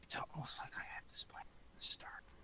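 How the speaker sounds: very soft, close whisper. Xavier leans over to Anna and whispers in her ear, very softly. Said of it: "he just whispers very softly in her ear".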